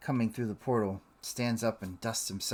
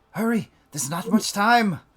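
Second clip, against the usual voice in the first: very loud, very high, fast, hurried urgent shout; 10 semitones higher, 11 dB louder than usual. Voicing a character who looks back at the closing portal: shouting urgently. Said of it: "he looks back and shouts at Kaylin".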